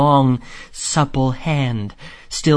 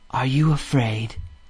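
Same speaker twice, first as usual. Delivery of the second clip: quavering, trembling, barely voiced half-whisper; 4 dB quieter than usual. Narrator reads Mole asking Rat whether he is afraid, shaking half-whisper. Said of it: "Mole found breath to whisper, shaking".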